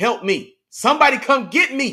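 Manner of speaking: put-on high, loud, drawn-out scream. Imagining Tyreek Hill on the Dolphins: imitating Tyreek Hill screaming for help. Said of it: "he's screaming".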